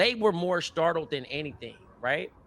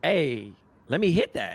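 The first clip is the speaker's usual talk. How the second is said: usual speaking voice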